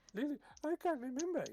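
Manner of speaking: squeaky, very high-pitched character voice. Voicing a character imitating Lulu who cannot remember: Lulu's voice. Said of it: "he says in Lulu's voice".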